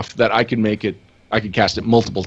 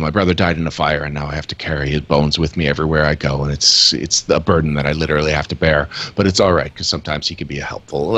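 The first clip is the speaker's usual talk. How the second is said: flat monotone, gravelly voice, lower and faster; 6 semitones lower than usual. Describing their character, speaking as her in a flat monotone, gravelly voice. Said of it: "So like monotone, grovelly voice".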